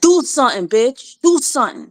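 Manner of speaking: put-on high-pitched New Jersey accent. Showing how people from Jersey talk, New Jersey accent. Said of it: "That's Jersey for you".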